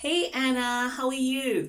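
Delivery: high, loud, excited teacher voice. A teacher shows how to greet a student, sounding excited. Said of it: "you need to sound excited".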